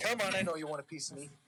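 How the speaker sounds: ordinary delivery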